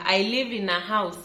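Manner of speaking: ordinary talk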